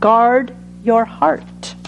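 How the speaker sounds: very slow, measured, emphatic, each word drawn out.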